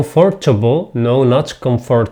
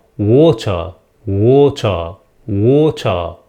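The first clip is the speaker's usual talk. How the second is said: water said the British way, R dropped; 3 semitones lower than usual. Showing learners the british way to say a word: british accent. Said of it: "or you can say in British accent".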